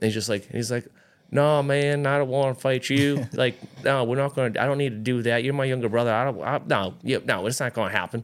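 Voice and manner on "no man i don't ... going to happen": put-on Southern hillbilly accent, higher. Retelling what an older brother says to his younger brother, in a Southern hillbilly accent. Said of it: "he talks like he's a Southern hillbilly".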